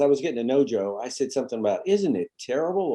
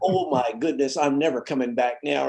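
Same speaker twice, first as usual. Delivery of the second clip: put-on laughter breaking up the words. Retelling a coach laughing at the fan's jeer: imitating Gibbs laughing while talking. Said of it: "Gibbs just starts laughing, like".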